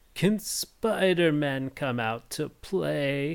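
high, sinister, creepy villain voice, very slow, mocking.

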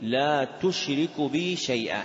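ordinary delivery

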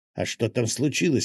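plain reading voice

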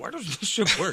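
fed-up, frustrated, griping tone. Teasing the other speaker by imitating their usual frustrated complaint. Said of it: "You're always like".

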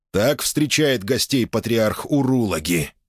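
usual speaking voice

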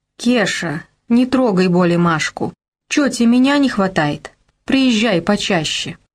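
usual speaking voice

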